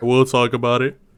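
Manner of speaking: words spoken mid-yawn, yawning throughout. Wrapping up football talk on a podcast, yawning while talking. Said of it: "why are you making your voice like that?".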